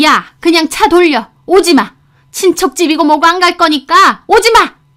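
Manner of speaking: high-pitched, loud, furious shout. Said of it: "하시더니".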